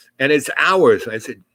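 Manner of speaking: usual speaking voice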